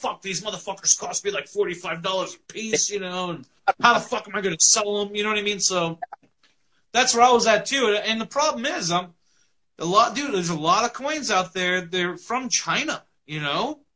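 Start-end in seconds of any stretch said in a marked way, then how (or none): 0.0-5.1 mock-angry, put-on angry voice. Retelling what he said after trying out an experimental move, mock-angry retelling. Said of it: "he was all pissed off".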